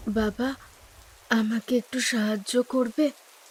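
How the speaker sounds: faint, almost whispering. Reading a ghost story aloud, a woman in the rain asks for help: very soft, almost whispering. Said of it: "প্রায় ফিসফিসে গলায় বললেন".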